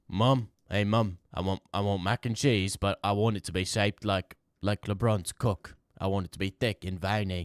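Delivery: put-on British accent. Speaker does a bit calling out to mom, in a British accent. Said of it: "I'm doing a British accent".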